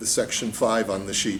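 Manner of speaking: ordinary delivery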